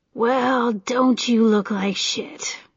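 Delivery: dry, rasping, raspy-voiced delivery. A man greets an injured woman who has come to see him; dry, raspy voice. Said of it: "he said in a dry, raspy voice".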